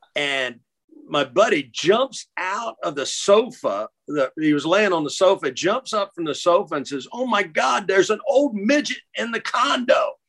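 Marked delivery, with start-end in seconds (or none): 7.1-10.1 high, frantic, panicked shriek of alarm. Retelling a buddy jumping up from the sofa: imitating someone screaming.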